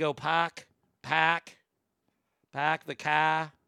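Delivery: slow Boston accent with the r sounds dropped. Explaining boston pronunciation with no r in car: boston accent, dropped r. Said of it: "I'm really working on my Boston accent".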